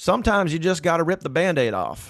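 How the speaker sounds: put-on accent from southern Georgia. Retelling advice Ivy gave during a conversation: imitating Ivy's southern Georgia voice. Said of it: "in his kind of southern Georgia voice".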